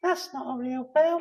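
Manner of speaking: tiny, squeaky, high-pitched little voice. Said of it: "a small squeaky voice".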